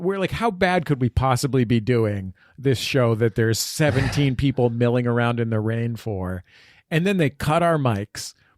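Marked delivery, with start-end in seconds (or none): none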